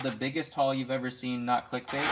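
usual speaking voice

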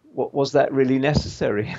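ordinary talk

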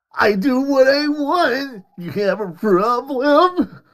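sassy woman's voice, full of attitude, drawn-out "want". Doing a game character's lines, imitating a sassy woman. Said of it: "It's a sassy woman".

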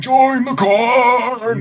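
very high shrill shriek, corn stretched. Voicing six scarecrows chasing a player through corn: scarecrows shouting.

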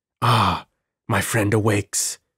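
low murmured voice like a living-dead man. A narrator reads a man addressing someone gripping cell bars; murmured living-dead voice. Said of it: "he murmured in his voice, the voice of a living dead man".

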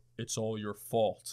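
voice dropped way down, deep and low. Retelling a mysterious voice they heard speaking to them, deep voice. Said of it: "I hear this deep-ass voice go".

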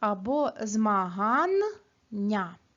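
Змагання said very slowly, split differently into syllables.

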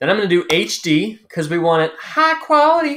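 voice unexpectedly rising, jumping up high. Walking viewers through exporting a video, voice rising unexpectedly. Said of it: "I don't know why my voice went up there".

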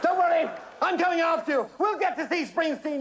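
calling out loudly. A man climbing out of a plane calls to another man falling ahead: yelling. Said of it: "yelled Algy".

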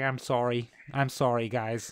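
put-on obvious, strong Canadian accent. Mocking an actor's casting, imitating Jay Baruchel. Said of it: "he talks like that, and he's so obviously Canadian. He's like".

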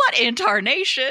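put-on Wild West cowboy outburst. Retelling how Jo broke in, like breaking up a saloon brawl: Jo's Wild West saloon voice. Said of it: "like she's breaking up a brawl at the saloon in the Wild Wild West".

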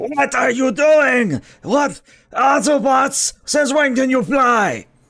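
very high, loud, shrill robotic screech through a speaker. Voicing an enemy robot hit by a rifle shot: screeching robotic speaker voice. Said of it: "kinda screeches in, uh, speaker fashion and goes".

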